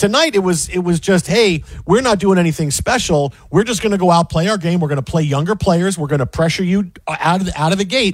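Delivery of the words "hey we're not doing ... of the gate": plain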